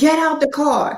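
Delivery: light, high, mild half-yell. Acting out both sides of an exchange, the speaker imitates someone yelling. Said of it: "and you're yelling".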